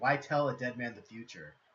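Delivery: chilling, ice-cold delivery. Retelling the coldest line delivered in a show scene: imitating a cold delivery. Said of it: "the coldest line ever delivered".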